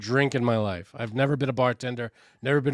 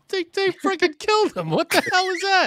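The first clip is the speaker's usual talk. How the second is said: mock weepy, tearful outburst in a very high voice; 3 dB louder than usual. Retelling crying to a mother over a sad book: imitating own past crying. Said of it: "I remember crying to my mother".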